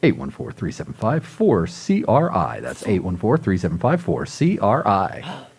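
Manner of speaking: deep put-on radio announcer read-out voice. Giving the theater's phone number, in an announcer voice. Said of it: "in my announcer voice".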